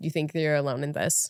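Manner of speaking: ordinary talk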